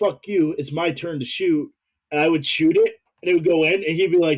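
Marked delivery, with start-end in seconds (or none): 0.0-1.7 mock taunting, cocky, in-your-face jabbing tone. Retelling answering a teammate yelling for the ball: retelling own trash talk. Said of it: "talking shit to him the whole time".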